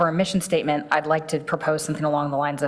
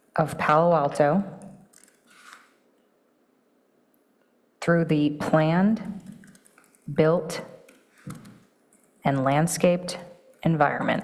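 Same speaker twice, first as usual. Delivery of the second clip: very slow, deliberate, spelled out word by word. Re-saying a statement aloud for the others present, as slowly as possible. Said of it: "I'm going to re- say it as slowly as I can".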